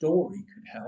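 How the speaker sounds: ordinary delivery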